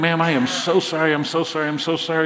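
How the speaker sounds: put-on apologetic preacher voice. Retelling a preacher's fall onto a lady: imitating an apologetic preacher. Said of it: "He was so apologetic".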